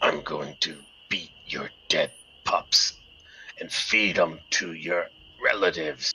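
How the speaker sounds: very rough, deep, gravelly voice. Game narrator voices what the creature hears, in a gravelly voice. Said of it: "it hears a real grovelly voice".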